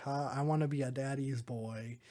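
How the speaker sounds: plain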